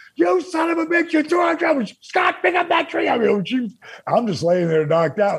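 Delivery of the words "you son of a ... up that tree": very high-pitched, shrieking put-on scream. Telling a story, the speaker quotes Kimberly yelling at the man who threw the tree: imitating Kimberly screaming. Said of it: "she's screaming at him".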